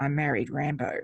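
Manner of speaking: put-on muttering under the breath. Retelling a line said under her breath in a film action scene: imitating muttering under breath. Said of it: "under her breath".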